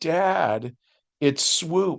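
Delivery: play-acted crying, sobbing tearful words. Retelling what a daughter said to her dad, imitating her sobbing. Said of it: "And she just starts to sob".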